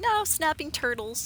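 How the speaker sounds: put-on high, matter-of-fact kid voice. Retelling how a young niece answered a question: imitating a matter-of-fact kid. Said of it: "matter of fact about it".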